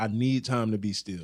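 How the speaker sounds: plain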